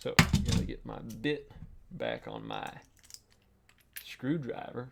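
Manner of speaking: screwdriver said southern-style. Working on a screwdriver bit for viewers, in a southern accent. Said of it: "I'm talking with a southern accent whenever I say screwdriver".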